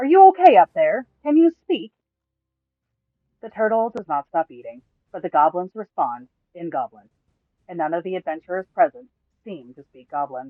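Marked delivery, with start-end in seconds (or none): 0.0-1.9 very loud, high-pitched, far-carrying yell. The narrator voices a character calling up to a massive turtle's head, yelling. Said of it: "approaches the turtle's head and yells".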